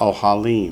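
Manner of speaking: ohalim with last syllable stressed, falling end.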